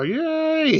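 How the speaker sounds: play-acted, long, very high, drawn-out clown yell. Retelling Bozo cheering before a cartoon: imitating Bozo yelling. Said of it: "Bob Bell, as Bozo, yelling or laughing".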